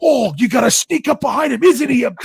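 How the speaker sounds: put-on Australian accent, pitched very high. Talking about sneaking up behind a snake, in a put-on australian accent. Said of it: "you can't be around a snake without having to use an Australian accent".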